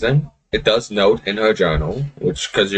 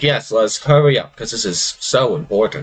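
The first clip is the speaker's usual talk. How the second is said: eager-sounding words, heavy dry sarcasm underneath. Voicing Mia as she comes up right behind the group, sarcastic. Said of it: "He says sarcastically".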